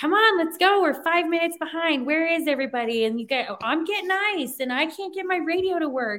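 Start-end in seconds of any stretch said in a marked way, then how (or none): 0.0-3.0 put-on, loud, raised yelling voice. Speaker tells Mark how they yell at everyone on the radio, retelling own radio yelling. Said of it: "as many times as I yell at you on the radio".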